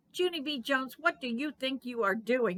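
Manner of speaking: loud, furious, angry yelling. Narrator reads the mother running in on Junie B. Jones, an angry yell. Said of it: "yelled an angry voice".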